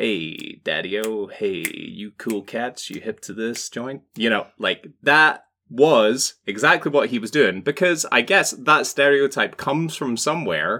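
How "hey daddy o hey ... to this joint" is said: hip, soft, cool, jive-talking beatnik style. Imagining someone trying to pass as a beatnik, beatnik voice. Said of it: "trying to pass as a beatnik".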